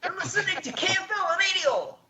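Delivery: put-on Scottish accent. Doing a radio station intro the way DJ Tom does, DJ Tom's Scottish accent. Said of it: "Scottish accent".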